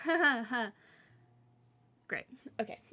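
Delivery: uncomfortable laugh. Narrating a barkeep who doesn't know how to handle the awkwardness, awkward laugh. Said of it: "not knowing what to do with this awkwardness".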